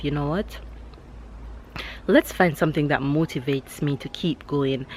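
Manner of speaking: ordinary delivery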